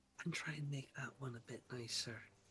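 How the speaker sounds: hushed whisper. She motions someone closer and whispers to them: whispering. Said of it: "and she whispers to you".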